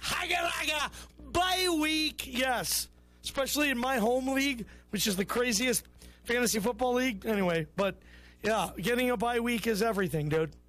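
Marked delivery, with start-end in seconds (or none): 0.0-2.3 mock taunting, high, shouted and gloating. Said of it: "and you're just like".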